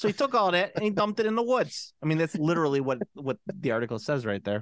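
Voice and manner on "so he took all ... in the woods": put-on New Jersey accent. Retelling what a news article says, with an accent he added himself. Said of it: "Accent was added by me".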